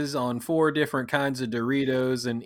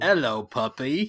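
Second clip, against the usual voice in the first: home-made, game-style, put-on British accent. Retelling how a wife quoted a pirate film: imitating a British accent. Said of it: "we were doing British accents".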